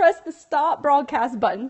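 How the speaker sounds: bad, weak, put-on Australian accent. Quoting Chocolate Johnny's advice to Periscope viewers, bad Australian accent. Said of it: "I don't have a great accent for Australia".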